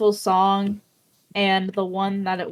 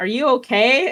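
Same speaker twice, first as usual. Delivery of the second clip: put-on loud whisper, higher pitch; 5 semitones higher, 5 dB louder than usual. Retelling being asked at a concert while crying: imitating Lee's loud whisper. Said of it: "in a loud whisper".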